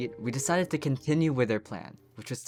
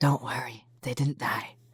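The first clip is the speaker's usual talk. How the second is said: hushed whisper. Narrating a game recap and adding a quick aside, whispering.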